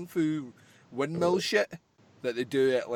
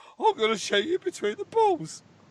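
put-on London cockney accent, high-pitched and loud. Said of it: "a cross between Michael Caine and Bennett".

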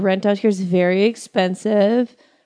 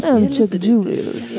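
put-on old, smooth-talking jazz man voice. On a show, a host voices a Skype-line caller, Chucky Julius voice. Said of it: "Sounds like an old, smooth-talking jazz guy".

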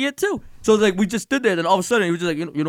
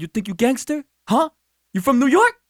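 acted, high-pitched, confrontational, squaring-up delivery; 5 semitones higher than usual. Retelling how a man stepped up and challenged: imitating a confrontational man. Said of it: "He's like".

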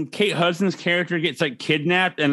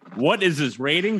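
ordinary talk

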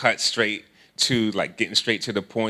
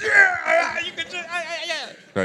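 giddy, thrilled, very high excited gush. Retelling the inner reaction when she asked to join: imitating excited inner voice. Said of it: "really excited".

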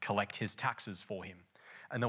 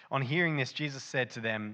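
ordinary delivery

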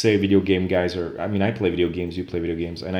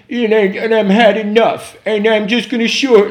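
put-on crazed rant, very high, very loud, shrill, drawn-out; 10 dB louder than usual. Act out a man alone in his car talking into a recording device, imitating a completely mad man. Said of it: "you can hear in his voice that he's completely mad".

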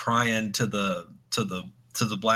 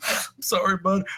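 put-on sobbing in a very high voice; 10 semitones higher, 4 dB louder than usual. Retelling a story where a crying cop speaks to another cop: imitating someone crying. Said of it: "He's crying. He's like".

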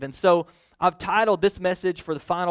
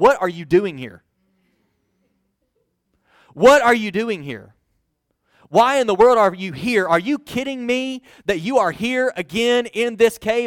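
loud, mad, upset tone; 3 semitones higher, 5 dB louder than usual. Speaker showing how readers imagine God questioning Elijah in the cave, angry, upset tone. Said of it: "God is mad and God is upset".

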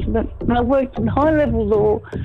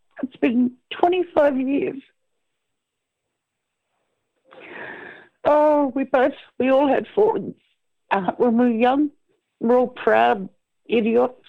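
slightly emotional, much slower. Talking about speaking to their sisters after 25 years, a bit emotional. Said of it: "just a bit emotional on that".

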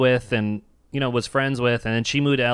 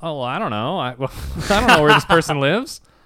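put-on defensive, protesting tone; 4 semitones higher, 4 dB louder than usual. Retelling a talk with a woman about where her friend lives, acting out getting defensive. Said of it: "I kind of got all defensive".

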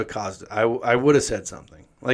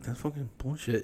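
very soft, quiet mutter under the breath; 14 dB quieter than usual. Retelling how a man reacted when someone walked past him in line, retelling a mutter. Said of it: "he just was like muttering like".

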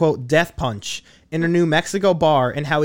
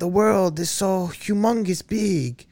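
put-on Russian accent in English; 3 semitones higher than usual. Quoting a man who talks about outer space, russian accent impression. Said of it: "cause he has a Russian accent. He'd be like".

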